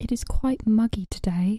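slow, put-on, Australian-sounding accent. Asked to say one line in a British accent, in an Australian-sounding accent. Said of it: "That was more Australian than anything".

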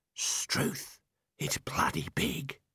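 low, hushed whisper. Narrator reading the Arch-Chancellor stepping into a big cave, in a low whisper. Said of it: "in a low whisper".

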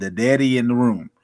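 normal talking voice

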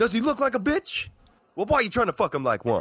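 very high shrieking scream, wildly swooping pitch. Quoting a Pulp Fiction line as the actor: Samuel L. Jackson impression. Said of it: "He talks like Sam Jackson in Pulp Fiction".

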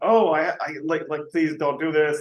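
mock pleading, begging voice. Imitating workers begging a boss to keep their jobs: imitating workers begging. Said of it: "begging to keep their job".

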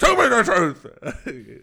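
booming, high, drawn-out, very loud intimidating shout. Planning to pin a suspect to the wall: intimidating shout. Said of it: "slam him up against the wall".

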